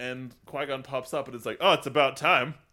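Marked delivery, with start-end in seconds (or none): 1.6-2.5 put-on, loud, very sassy, dismissive tone. Retelling what a ghost says on appearing: imitating a sassy remark. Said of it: "Just the sassiest "fuck you" comment".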